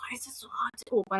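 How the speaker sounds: hushed muttering under the breath. Retelling struggling to open a jar in the kitchen, mumbling to oneself. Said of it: "literally just mumbling to myself like".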